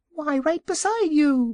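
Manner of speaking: very high, tiny squeaky voice. Reading a story, an unseen piglet answers the Wizard: tiny voice. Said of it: "spoke a tiny voice".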